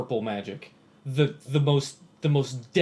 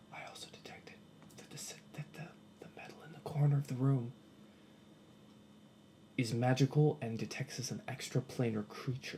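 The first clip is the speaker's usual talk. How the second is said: close-huddled, hushed, breathy whisper; 12 dB quieter than usual. Drawing close to the others in the game, whispering in character. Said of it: "I say in a whisper".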